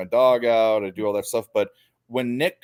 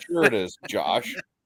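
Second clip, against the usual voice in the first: ordinary talk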